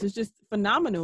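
plain

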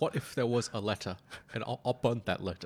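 exaggerated, overdone fake British accent. Performing a dramatized scene about the Talbot family, in an overly racist British impression. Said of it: "his overly racist British impressions".

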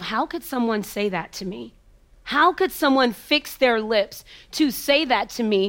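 plain

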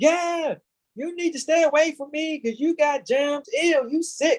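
loud, high-pitched mocking yell.

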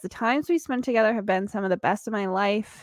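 ordinary talk

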